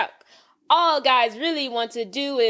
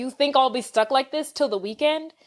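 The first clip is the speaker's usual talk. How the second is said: ordinary talk, nothing marked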